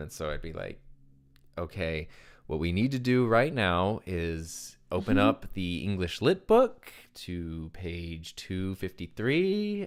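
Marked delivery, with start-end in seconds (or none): 1.6-9.9 very slow, drawn-out, careful, deliberate speech. Retelling how they had to speak after being told to slow down, talking very slowly. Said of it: "talk so slowly that it you almost feel ridiculous".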